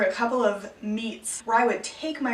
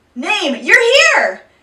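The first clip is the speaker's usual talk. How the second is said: amplified boom, very loud and very high; 9 semitones higher, 13 dB louder than usual. Retelling greeting a late classmate at the microphone: retelling a booming call. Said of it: "I sort of boomed".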